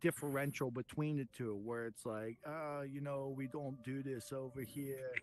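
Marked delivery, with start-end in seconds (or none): 2.5-5.1 clumsy, attempted British accent. Asking about UK and US traditions, putting on a best UK accent. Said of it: "that's my best U K accent".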